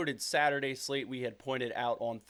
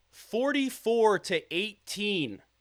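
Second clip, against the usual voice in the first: slow, deliberate, high and loud for emphasis. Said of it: "let me say this slowly".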